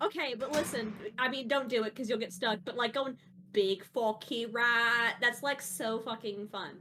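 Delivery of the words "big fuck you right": slow, put-on British accent. Explaining how fun the stuck catchphrase is: put-on British accent. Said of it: "being stuck in accents".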